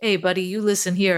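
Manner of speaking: put-on old-school, old-time gangster voice. Retelling how it answers when asked for a special voice: old school gangster voice. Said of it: "some kind of old school gangster voice".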